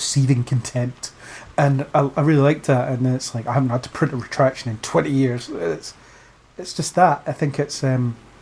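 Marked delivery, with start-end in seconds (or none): none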